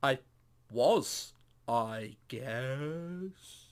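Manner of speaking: slow, unhurried delivery. In an acted scene, answering a question about playing piano, speaking slowly. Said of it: "that's me speaking slowly".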